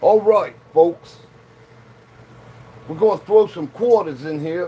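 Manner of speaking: clumsy, bad put-on New York movie-style accent. Imitating a coin pusher dude out of a New York movie, bad New York accent. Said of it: "sounds straight out of a movie from New York".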